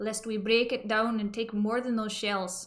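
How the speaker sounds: poorly done, fake put-on Scottish accent. Reading a dead man's lines from a transcript aloud, in a bad Scottish accent. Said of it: "the man who is speaking with a Scottish accent".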